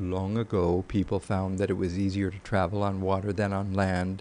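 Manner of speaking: flat, level, unvarying one-note monotone. Speaker demonstrates a voice that is very monotonal: flat monotone pitch. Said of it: "a voice that is very monotonal. So if I were speaking like this".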